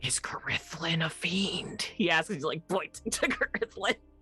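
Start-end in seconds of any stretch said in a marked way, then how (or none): 0.0-1.8 whispering in an acted character voice. Voicing a character who asks about a companion: whispering in character. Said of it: "He's whispering this".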